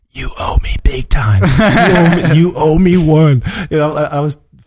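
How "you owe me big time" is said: repeated nagging stage whisper. Retelling what the wife kept whispering during a film: imitating a whisper. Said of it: "she whispers to me over and over again".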